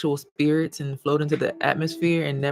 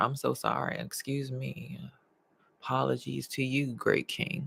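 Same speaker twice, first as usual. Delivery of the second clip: slow, ironic, sarcastic tone; 9 dB quieter than usual. Apologizing after cutting someone off: sarcastic apology. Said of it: "that was sarcasm".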